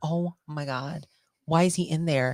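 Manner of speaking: normal talking voice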